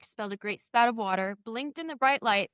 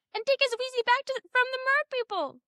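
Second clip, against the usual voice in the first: very high, squeaky little voice. Speaker does a promised Dobby impression of a Harry Potter line. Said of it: "I'm going to try to do my best Dobby impression".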